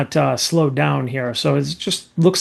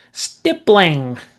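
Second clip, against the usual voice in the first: stippling said with a Canadian French lilt. Imitating a high school figure who said this word: French-accented 'stippling'. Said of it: "he had that French accent, so he'd be like stippling".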